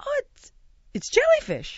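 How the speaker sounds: high-pitched, horrified squeak.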